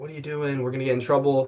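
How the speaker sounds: normal talking voice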